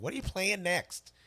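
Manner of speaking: very high-pitched, motherly voice. Reading a viewer's question aloud on the show, imitating mom's voice. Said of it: "I'm doing it in my mom's voice too".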